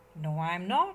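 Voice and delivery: ordinary talk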